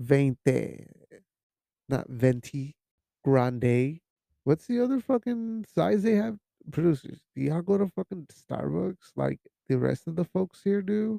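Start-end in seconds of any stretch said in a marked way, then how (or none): 0.0-4.0 put-on Spanish accent on the number. Retelling how she orders her drink size at Starbucks, with a Spanish accent. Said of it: "I say 20 with like a Spanish accent".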